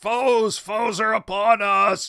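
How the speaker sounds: monster voice yelling in alarm. Voicing a fleeing orc raising a terrible row: fleeing orc shouting alarm. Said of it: "he is raising a terrible row as he goes".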